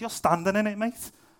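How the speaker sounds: put-on Liverpool Scouse accent. Speaker quotes his friend answering a challenging church leader, Scouse accent. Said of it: "he said it like that as well, because he was Scouse".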